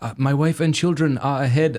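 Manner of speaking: non-native speaker's broken English. Retelling what the man who cut ahead replied: imitating broken English. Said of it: "this guy who spoke broken English".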